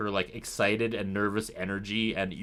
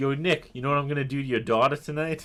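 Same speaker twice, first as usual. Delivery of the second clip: put-on, laid-on, pitched-up New York accent; 5 semitones higher, 4 dB louder than usual. Retelling what a character says on a show: imitating Ricky with a New York accent. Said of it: "What's with the accent, man? ... New York accent?".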